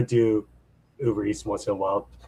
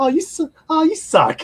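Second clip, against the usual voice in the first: put-on cutesy voice, much higher and louder; 4 dB louder than usual. Imagining a mean comment read aloud, the speaker does Christy's cutesy voice. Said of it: "this cutesy voice and just like read".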